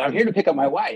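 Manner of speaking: ordinary talk, nothing marked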